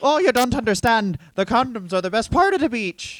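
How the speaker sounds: put-on Irish accent. Playing a character on a beach in wales: irish accent. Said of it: "that was an Irish person".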